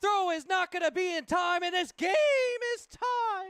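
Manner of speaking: very high voice, cracking and breaking. Calling a baseball play as the tying run scores, voice cracking. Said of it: "voice crack".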